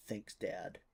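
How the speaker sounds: smug, low mutter under the breath. Answering a deity's comfort in character: smug, under the breath. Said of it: "I will smugly, under my breath".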